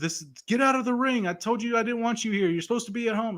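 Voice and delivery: acted very high, genuinely mad, furious yelling. Retelling a wrestling segment, imitating Roman Reigns yelling. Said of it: "he was yelling at Jay".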